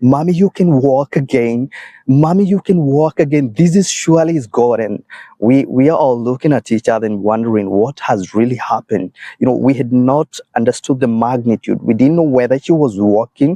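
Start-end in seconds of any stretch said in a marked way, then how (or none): 0.0-4.8 put-on high, tearful, weeping cry of amazement. Retelling what a daughter cried out on seeing her mother, imitating shouting and crying. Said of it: "she comes shouting and crying and saying".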